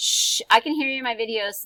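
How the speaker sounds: shushing yell. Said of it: "I didn't mean to yell at you and scare you".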